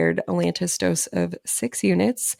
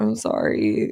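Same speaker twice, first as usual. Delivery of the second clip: put-on tearful crying voice, lower; 9 semitones lower than usual. Retelling apologizing to insurance on the phone: imitating own crying. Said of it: "crying on the phone".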